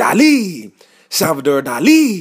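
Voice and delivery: put-on booming Brazilian accent with swooping pitch. Retelling how a man with a Brazilian accent showed a film line, as an animated Salvador Dali. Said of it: "He's like very animated".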